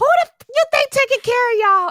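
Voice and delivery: very high cracking voice. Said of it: "her voice cracked and she sound just like Kevin Hart".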